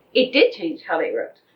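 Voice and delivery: ordinary talk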